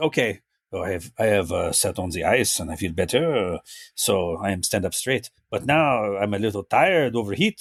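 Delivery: very slow drawl with broken, halting English words. Mocking an actor's performance in a film: Jean-Claude Van Damme impression. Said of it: "this is the acting for Jean-Claude in this movie".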